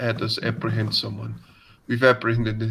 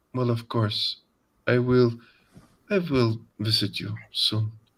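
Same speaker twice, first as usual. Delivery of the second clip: put-on, somewhat sensual, slightly sultry voice. Describing a call scene, reading Natalia's reply: Natalia's somewhat sensual voice. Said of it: "And it's somewhat sensual".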